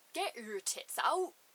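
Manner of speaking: put-on loud yell, broadest West Country accent, laid on thick. Imitate a shirtless jogger yelling as he runs past, in the broadest West Country accent. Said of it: "in the broadest West Country accent I've ever heard".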